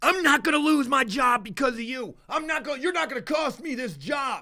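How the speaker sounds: put-on angry, screaming outburst. Retelling a worker shouting at another worker in the attic: imitating someone screaming. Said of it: "he's screaming at the other guy".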